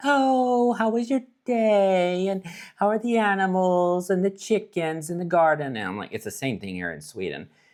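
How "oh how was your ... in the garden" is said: very high, drawn-out, fake-polite tone. Retelling morning small talk heard at work: imitating women's small-talk voices. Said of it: "you hear all the women's voices like".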